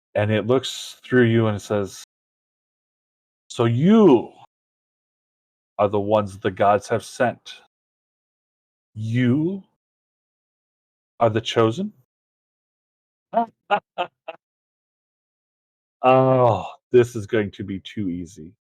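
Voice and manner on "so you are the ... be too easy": put-on blended, many-voiced, genderless voice with no accent. Voicing a cloaked figure who judges the heroes: genderless voice of many blended voices. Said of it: "in a similar natured voice as what the god spoke".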